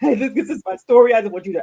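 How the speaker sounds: put-on crying. Director recalling calling people for help, imitating own crying. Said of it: "I used to call people crying".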